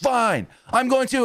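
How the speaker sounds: very high, slow, exploding furious anger. Retelling how one man finally blew up when pushed, retelling an angry outburst. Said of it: "M J F blows up and goes".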